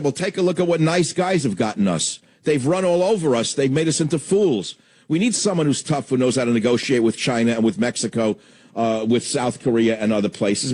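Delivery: normal talking voice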